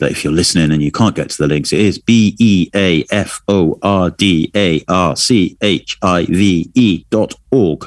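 computerized on-hold message voice. Reading out an archive web address for listeners, like a computerized on-hold message. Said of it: "You sounded like one of those computerized things then, on hold messaging".

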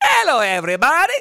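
very high, loud cartoon professor voice. Greet everybody with your impersonation for the day, a Simpsons scientist impersonation. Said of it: "There's my impersonation for the day".

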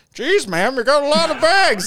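high voice talking out of side of mouth. Acting out someone's impression of a man at the store, talking out of side of mouth. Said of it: "talk out of the side of your mouth".

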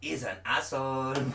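put-on generic South American accent. Reading out a quoted minister's words in a generic south american accent. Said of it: "Why does he sound like Captain Burrito".

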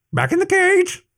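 very high screeching bird cry. Narrator reading the agitated Averon's reply to Blacktail's whispered question, screeching. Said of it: "it screeched".

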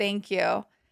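put-on cold, numb, stunned voice. Retelling a reply to a stranger's rude remark: imitating own cold numb shock. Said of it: "in my cold, numb shock".

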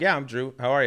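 ordinary talk, nothing marked

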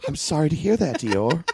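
put-on high-pitched small boy voice with British accent. Answering another character, in a little british boy voice. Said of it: "it's still a little British boy".

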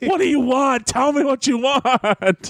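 high, pleading, exhausted, begging tone.

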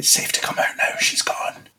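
hushed, soft whisper. A speaker calls out to someone hiding that it's safe now, whispering. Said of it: "but I'm whispering".

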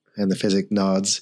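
ordinary delivery

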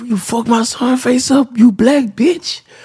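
very high-pitched scolding voice. Retelling what mom said to the older brother: imitating mom's voice. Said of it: "she talking like this to my older brother".

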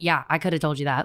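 mock calm, unbothered tone. Retelling a friend rolling her eyes: imitating unfazed Cassie. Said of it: "she was so unfazed".

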